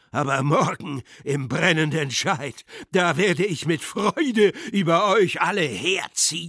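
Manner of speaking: screaming. Being pushed toward the door, a man yells at everyone, screaming. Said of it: "schrie der Scheidler".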